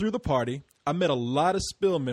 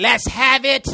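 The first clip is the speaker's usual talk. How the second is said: high, pitched-up leprechaun-style voice; 8 semitones higher, 9 dB louder than usual. Teasing another speaker by repeating his words: imitating a leprechaun voice. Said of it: "you sound like a leprechaun".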